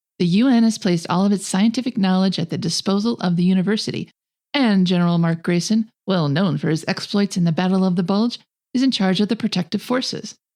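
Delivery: ordinary delivery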